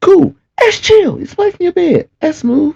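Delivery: very high, sing-song, fake approving voice.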